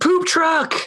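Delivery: high-pitched mock scream. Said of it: "he screams".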